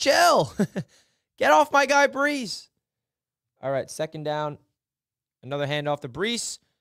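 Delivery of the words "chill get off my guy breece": mock, high-pitched screaming yell. Retelling screaming at the tv during a play: imitating own screaming. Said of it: "I remember screaming at the T V".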